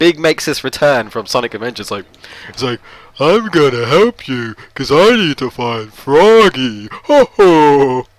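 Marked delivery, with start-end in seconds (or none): 3.2-8.0 loud, booming, very slow cartoon voice, "ho" stretched. Speaker recapping Big's return from Sonic Adventures, doing a Big impression. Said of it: "That was my Big impression".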